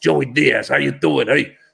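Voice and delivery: rough, creaky, raspy voice. Telling about a comedian friend, doing a Joey Diaz impression. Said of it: "He talks like this".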